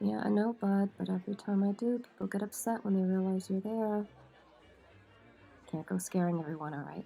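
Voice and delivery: very quiet, hushed murmur under the breath. Louise, once the woman bringing meals has gone, speaking to her companion: very quiet. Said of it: "Louise very quietly says".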